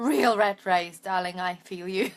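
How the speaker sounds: talking while cracking up, laughing through the words. Replying to a viewer's message she just read aloud, laughing while talking. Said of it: "sorry, I'm laughing".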